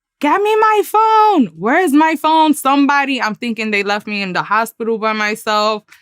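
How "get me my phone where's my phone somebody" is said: put-on frantic, high-pitched, panicked yelling. Recounting waking alone in a dark hospital, retelling a yell. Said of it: "so I'm yelling".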